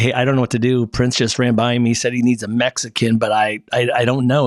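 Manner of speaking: ordinary talk, nothing marked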